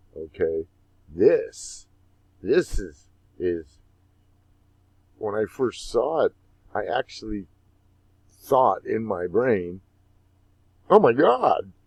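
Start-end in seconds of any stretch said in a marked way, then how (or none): 10.9-11.5 put-on very high, loud Valley Girl accent. Recalling a first reaction to a yield curve chart: valley girl accent.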